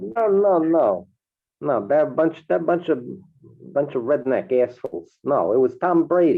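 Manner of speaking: New Yorker's accent. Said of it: "I'll talk like a New Yorker".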